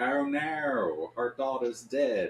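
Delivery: high, slow, drawn-out put-on Australian accent. Imitating an Australian family in a film: put-on Australian accent. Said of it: "I'm gonna do the accent the whole time".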